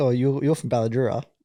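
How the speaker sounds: ordinary talk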